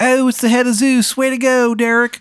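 very high, bad, laid-on Maryland accent. As Shithead Steve, greeting Derek who has come around back, in a terrible Maryland accent. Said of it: "in his terrible Maryland accent".

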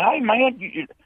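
mock scream, very high-pitched, called out. Retelling spotting a man about to urinate near women: retelling his own scream. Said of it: "I screamed".

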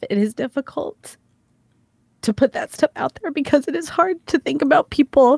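speaking through tears, tearful crying voice. Thanking everyone for letting them talk about this kind of stuff, crying. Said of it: "I'm sorry, now I'm crying".

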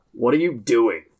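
gruff palace guard character voice. Player in a tabletop game voicing a palace guard who stops a dwarf, palace guard voice. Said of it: "a palace guard is standing there going".

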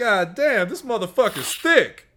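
play-acted, high, blurted-out yell. Retelling how a man in a movie theater yelled out: imitating a man yelling out. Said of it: "he just yells out".

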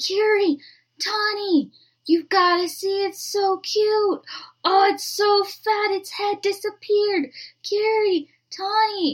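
high, slow, excited sleep-talking voice.

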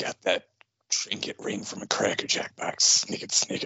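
low, grumbled mutter under the breath. Imagining an X-Men hero's reaction to a rival show, Wolverine muttering. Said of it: "97 Wolverine muttering".

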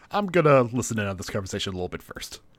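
normal talking voice

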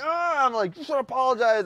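insistent, high, loud delivery.

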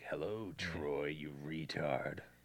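low, very soft, creepy horror killer voice. Showing how he greets someone, the speaker uses the Scary Movie killer voice. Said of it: "I'm still doing that voice too".

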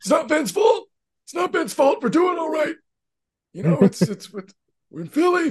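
very high, squeezed-up put-on character voice. Imitating a coach defending his team after a rough game: Doc Rivers impression. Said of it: "your best Doc impression".

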